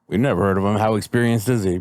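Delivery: ordinary talk, nothing marked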